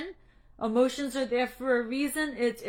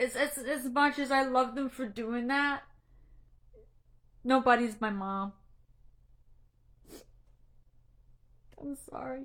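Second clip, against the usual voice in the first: tearful, crying. Speaking to viewers on a live stream about their mom, crying. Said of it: "I know I'm crying".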